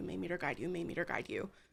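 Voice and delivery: very quiet murmur under the breath. A character casting a spell repeats it very quietly under her breath. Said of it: "very quietly under her breath just saying".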